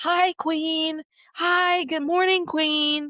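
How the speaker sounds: high, drawn-out hollered shout. Retelling a woman down the street greeting her, retelling a scream from afar. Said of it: "she screamed at me from like down the street".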